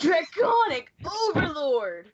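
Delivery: slow, loud, booming shout. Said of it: "imitating Kai".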